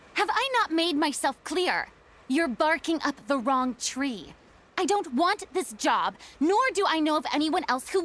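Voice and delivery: curt, harsh, angry, cutting tone. In a game scene, a character answers a request: angry. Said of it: "sounded angry there".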